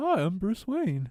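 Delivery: light, high voice, unhurried and taking its time. Describing the first Batman Animated Series episode, doing the Bruce Wayne voice. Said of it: "almost sounds like Jerry Seinfeld".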